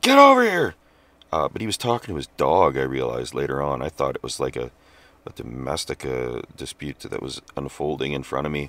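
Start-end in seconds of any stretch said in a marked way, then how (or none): 0.0-0.7 put-on very high, loud, furious man's scream. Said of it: "He's losing it".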